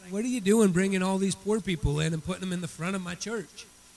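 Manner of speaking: ordinary talk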